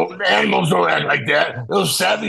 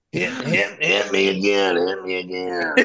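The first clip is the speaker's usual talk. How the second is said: mock dominatrix voice, lower; 9 semitones lower, 3 dB quieter than usual. Doing a joking impression of a dominatrix: dominatrix impression. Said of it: "That was the best impression I've ever".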